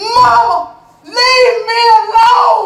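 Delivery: high, loud screaming outburst.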